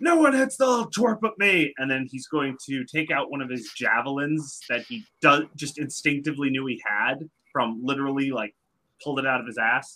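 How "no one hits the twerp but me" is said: very high charging battle cry, in character. Voicing a character running up to defend an ally: yelling in character. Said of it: "run up and yell".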